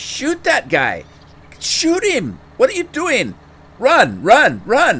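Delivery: shrill, very high, very loud, swooping yelling. Speaker recalls yelling at his game character during a fight, retelling a yell. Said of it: "and I'm yelling".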